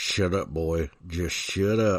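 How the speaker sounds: low, slow mutter through gritted teeth, lips still. Retelling what a dad would say to his son, imitating talking through teeth. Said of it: "through his non-moving lips and through his teeth".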